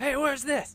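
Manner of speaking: high-pitched, loud, demanding yelling.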